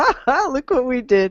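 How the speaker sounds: gleeful, self-pleased, put-on ha-ha gloating laugh. Imagining someone at the company laughing about what they did: mock gleeful laughing. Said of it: "Somebody's got to be laughing, going".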